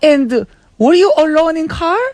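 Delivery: fake Korean accent, broken English. Playing a korean mom in an improv scene: korean mom with broken english. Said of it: "she will have an accent".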